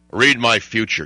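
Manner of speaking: strong, manly, confident macho tough-guy voice. Quoting a man's line in a scene: macho voice. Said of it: "in that macho voice".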